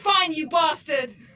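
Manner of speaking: high-pitched screamed outburst. Narrating a scene aloud, voicing Julian as he screams out again. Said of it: "Julian screams out".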